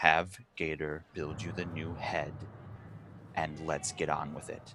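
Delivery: grave tone, very deep and very quiet. Narrating a character who is calming down but gives an order, very serious tone. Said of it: "in a still very serious tone".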